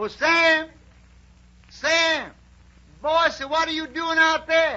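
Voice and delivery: high, loud holler, sounding from far away.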